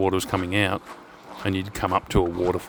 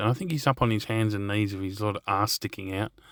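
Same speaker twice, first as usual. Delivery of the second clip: usual speaking voice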